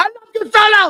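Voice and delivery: shrill, out-of-control, very high, loud screaming. Acting out what a man yelled at solo through the whole match, imitating someone yelling. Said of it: "he was yelling at him through the whole match".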